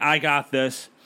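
plain

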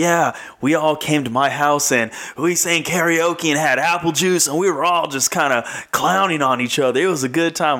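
gushing, thrilled, all-excited and eager delivery. Retelling how he described his prom after-party, imitating someone all excited. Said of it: "he was all excited".

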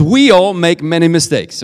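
strong stress on the word WE. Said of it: "but it says".

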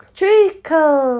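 drowsy, just-woken voice. Reading a story, the dormouse speaks from behind the cook, sleepy. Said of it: "said a sleepy voice behind her".

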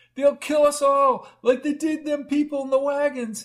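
very high, frantic, hysterical shouting. Fallen on the grass and caught by a woman, a man shouts hysterically. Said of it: "he shouted, his eyes hysterical".

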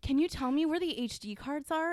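high, affected, put-on upper-crust rich voice. Speaker acts out their own request to a worker, put-on rich voice. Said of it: "And like the rich voice".

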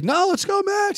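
play-acted, very high-pitched whooping yell. Retelling a cop on the highway cheering at the truck: imitating a cop yelling. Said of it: "yelling on the highway".

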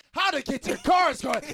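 loud, high ad announcer voice.

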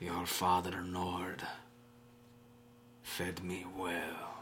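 very hushed, soft, very slow voice. Voicing a presence that speaks in the player's father's voice: voice of the father Nord. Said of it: "The voice changes to your father's voice".

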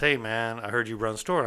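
ordinary talk, nothing marked

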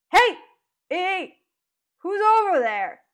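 high-pitched, loud shouting yell. Narrating a game, voicing a man on deck who spots movement; yelling out. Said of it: "And he yells out".

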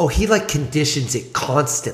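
rough attempt at a put-on New Jersey accent. Speaker quoting a quarterback dad's wife, attempted jersey accent. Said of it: "I don't know if that's a Jersey accent".

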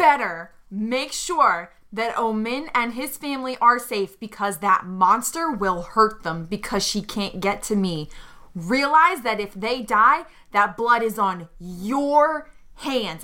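ordinary talk

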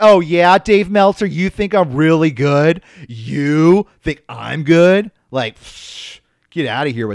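mock very loud, slow, super defensive, passive-aggressive. Acting out a made-up defensive reply to a compliment: mock passive-aggressive and defensive. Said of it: "Passive aggressive and super on the defense".

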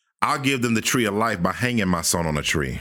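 ordinary talk

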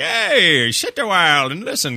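put-on slow, swooping, loud drawl in Scottish accent. Describing a tavern feel, imitating a Scottish guy talking your ear off: Deckard Cain voice. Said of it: "You got some Scottish guy talking your ear off".

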